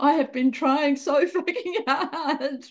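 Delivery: high-pitched, laughing through the words. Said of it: "I'm laughing now".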